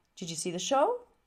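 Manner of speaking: rising tune at the end, on show. Teaching English question intonation with an example, with rising question intonation. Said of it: "My voice goes up".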